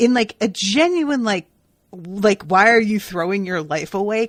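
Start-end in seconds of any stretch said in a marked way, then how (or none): 2.4-4.3 put-on judgmental, upset outburst, louder. Retelling a reaction to a friend's news: imitating a judgmental, upset voice. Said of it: "kind of voice".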